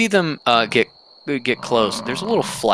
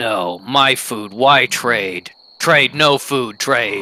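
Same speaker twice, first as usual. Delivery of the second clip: grunting, rumbling creature voice with elephant-like tooting; 3 dB louder than usual. Voicing a creature refusing to trade its food, grunting creature voice with elephant-like tooting. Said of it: "rumble grunting you get back with a little bit of, like, almost tooting like an elephant".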